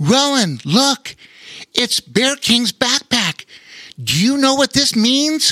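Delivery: very high, eager, excited burst. A boy finds a backpack and calls out to his brother, excited. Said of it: "Laura asked excitedly".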